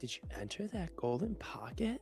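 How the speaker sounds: very quiet, soft, coy, teasing and flirty. Saying the line in the assigned flirty way: flirty delivery. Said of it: "it's flirty".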